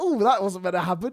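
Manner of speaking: put-on amused, giggly, laughing through the words. Retelling what the doctor said after the mishap, imitating laughing speech. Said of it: "The doctor starts laughing and going".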